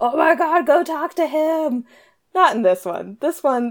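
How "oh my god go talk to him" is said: acted, high, drawn-out, exasperated shouted cry. Retelling yelling at the characters in a book: imitating a scream. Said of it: "screaming at the characters".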